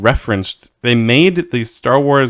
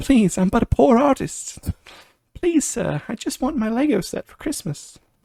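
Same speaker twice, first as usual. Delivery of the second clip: put-on, very high, pleading poor orphan voice; 11 semitones higher, 5 dB quieter than usual. Imitating a pleading buyer asking for a lego set: orphan voice. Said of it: "that's my orphan voice".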